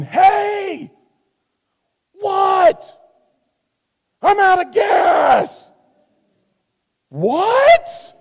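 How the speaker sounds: very high, very slow, drawn-out yelling. Recalling a drive on the interstate, the speaker re-enacts yelling at her: retelling a yell. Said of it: "I'm yelling at her going".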